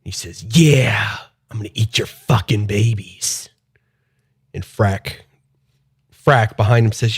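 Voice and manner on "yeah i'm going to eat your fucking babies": scary, menacing goblin voice. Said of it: "I sound scary as shit right now".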